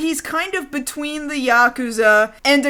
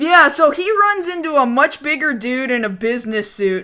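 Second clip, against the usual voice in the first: usual speaking voice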